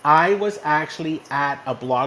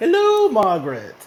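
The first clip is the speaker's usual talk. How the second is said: loud, high-pitched, bad posh British accent; 7 semitones higher, 6 dB louder than usual. Greeting a woman when their pedicabs met up, bad Queen of England impression. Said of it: "I was thinking I sounded like the Queen of England".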